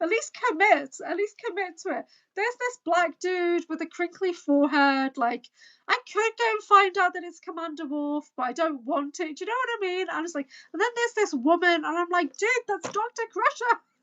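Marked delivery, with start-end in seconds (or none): 12.4-13.8 play-acted, high-pitched shouting. Describing watching a video, the speaker retells shouting at the screen. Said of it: "I'm like shouting at the screen".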